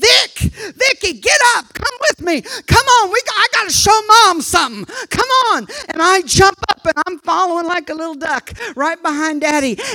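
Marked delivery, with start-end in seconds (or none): 0.0-5.7 high, excited, urgent holler. Retelling how Dad jumped up and called out: retelling a yell. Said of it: "he yells".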